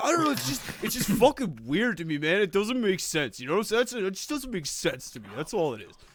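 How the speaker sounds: mock drunk rant. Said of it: "drunk and ranting about women".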